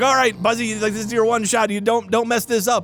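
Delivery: ordinary talk, nothing marked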